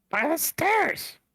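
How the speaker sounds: very high, squeaky kobold creature voice. Game master as a kobold, telling the players where the room is, in a kobold voice. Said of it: "It's a kobold voice".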